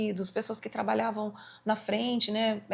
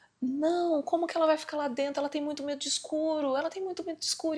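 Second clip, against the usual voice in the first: put-on frantic, desperate voice, pitched up; 6 semitones higher than usual. Retelling a burial story, imitating the mother: imitating a desperate mother. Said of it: "a mãe ficou desesperada e ela falava assim".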